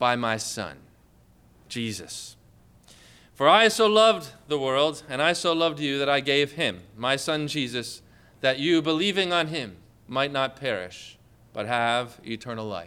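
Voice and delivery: deep godlike voice. Speaker voices the Lord answering the listener, in a deep voice. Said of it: "he answers you with a deep voice".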